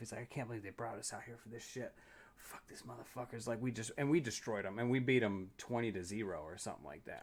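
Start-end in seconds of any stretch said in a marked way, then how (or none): 0.2-3.5 acted, seething, breathy, half-whispered, hushed angry rant. Retelling what the captain said about the war game: imitating an angry captain. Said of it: "He was all pissed off".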